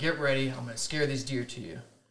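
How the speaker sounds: ordinary talk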